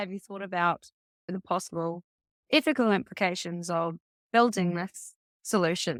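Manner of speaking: normal talking voice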